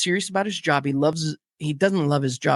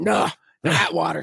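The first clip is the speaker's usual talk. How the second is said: put-on gruff voice. Retelling what a delivery guy said when offered water: gruff voice imitating Sweats. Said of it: "He's real gruff".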